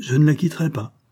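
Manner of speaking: sudden, high, ringing outcry. Reading a French novel aloud, voicing a character in a gambling scene, exclaiming. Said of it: "s'écria-t-il".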